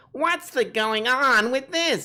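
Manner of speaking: very high-pitched, indignant, griping complaining voice. Describing how he would complain about insignificant crap: complaining Andy Rooney voice. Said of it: "complain about it".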